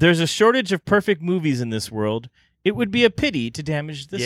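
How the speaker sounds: ordinary delivery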